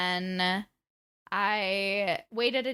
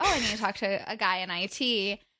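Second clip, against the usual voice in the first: ordinary talk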